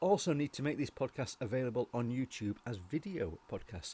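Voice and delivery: ordinary delivery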